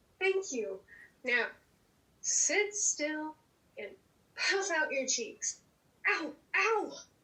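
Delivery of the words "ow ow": screaming in pain, higher. Being shaved with a razor after being told to sit still, screaming in pain. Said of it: "Why are you screaming?".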